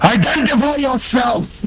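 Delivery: shouting. Running the game, the speaker voices a figure confronting the players: shouting. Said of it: "He shouts".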